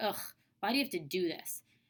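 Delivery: frustrated tone. Explaining what the word annoyed means, showing frustration. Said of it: "you're frustrated and you're like".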